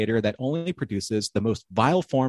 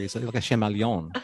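archaic English fair-speak accent. Joking with another speaker by stepping into a put-on Renaissance Faire accent. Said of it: "if I step into my Ren Fair accent a little bit here".

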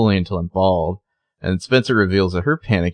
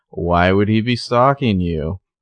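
play-acted dry, flat deadpan delivery. Discussing a story about a stalker, retelling Spencer's deadpan line. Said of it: "Spencer just deadpan is like".

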